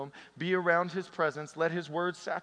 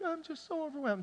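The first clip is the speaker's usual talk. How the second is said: mock crying voice, very high and teary; 10 semitones higher, 6 dB quieter than usual. Imagining a listener sitting there crying before Jesus: imitating someone crying. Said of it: "as you're sitting there crying".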